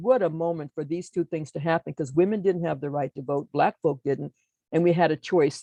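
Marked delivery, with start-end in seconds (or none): none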